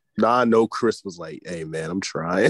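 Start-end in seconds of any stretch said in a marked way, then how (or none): 1.5-2.5 mock casual, unbothered, offhand, nonchalant delivery. Imitating a teammate answering calmly: imitating Chris, nonchalant. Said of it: "on some nonchalant ass".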